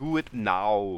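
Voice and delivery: English spoken in a fake Russian accent. Speaker getting requests to speak russian gives it a try: fake russian accent. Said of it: "It's not even Russian, but it has the accent".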